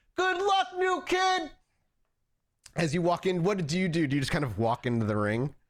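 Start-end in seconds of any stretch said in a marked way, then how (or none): 0.2-1.5 very high, loud shouted call. Voicing one person in the crowd calling to a fighter: crowd member shouting. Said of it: "one person shout out".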